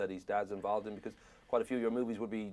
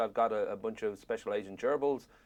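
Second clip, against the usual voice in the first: ordinary talk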